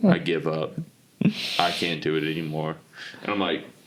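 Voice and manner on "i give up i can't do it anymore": mimicked defeated grown man voice, lower. Imitating a grown man calling in after a loss: imitating a dejected grown man. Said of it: "a grown man just totally dejected".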